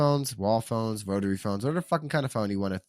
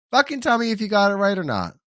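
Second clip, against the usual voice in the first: very high, shrill, high-pitched yell; 9 semitones higher, 5 dB louder than usual. Asking listeners to say whether they got the trivia right: yelling. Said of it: "I'm yelling at everybody today".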